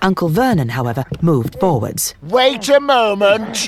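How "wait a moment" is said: high, roaring, loud bellow. Uncle Vernon moves forward and calls toward the fire; bellowing. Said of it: "He bellowed at the fire".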